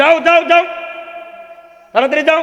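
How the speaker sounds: scolding. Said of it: "আমি ধমক দিয়েছি".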